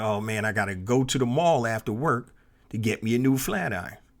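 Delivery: plain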